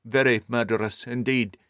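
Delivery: ordinary delivery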